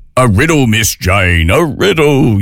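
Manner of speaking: slow puppet voice, each word dragged out. A radio host quotes Romper Room's riddle segment in a Bill Steam Shovel impersonation. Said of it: "my Bill Steam Shovel impersonation".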